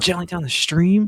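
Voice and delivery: high, fully voiced stage whisper kept out loud. Retelling a funny quote from a show: imitating Vito half-whispering. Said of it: "And he whispers".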